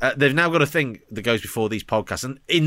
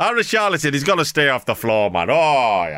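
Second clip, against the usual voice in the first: put-on older pundit, commentator voice. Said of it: "sounds like a cross between Laurie McMenemy and Churchill the dog".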